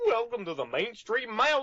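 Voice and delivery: pitch pushed way up and swooping around. Asked to record the welcome line in any voice, doing a Goofy voice. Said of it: "Here's Goofy for you".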